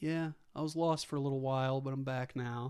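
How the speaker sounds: classic dude voice. Retelling a movie's ending, quoting Big Z: classic dude voice. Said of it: "the classic, like, dude voice".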